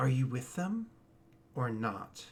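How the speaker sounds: low voice. Narrating a scene, the storyteller voices a man addressing the player: low voice. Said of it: "he says to you in a low voice".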